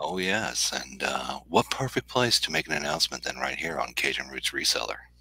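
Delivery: very quiet, low, hushed, drowsy just-woke-up voice. Speaker on Cajun Roots Reseller this morning with an announcement to make, sleepy voice. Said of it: "sleepy, Patrick voice this morning".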